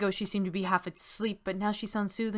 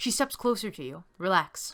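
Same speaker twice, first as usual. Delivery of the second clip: ordinary talk, nothing marked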